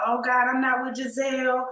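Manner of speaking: put-on teary, weeping voice. Retelling a line from the episode, imitating Robin crying.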